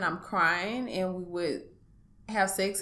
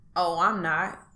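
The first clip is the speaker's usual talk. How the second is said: put-on smug, self-satisfied, offhand throwaway delivery; 4 dB louder than usual. Retelling his reply at the mirror: imitating a smirking reply. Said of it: "with a smirk in his face".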